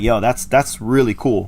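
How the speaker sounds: usual speaking voice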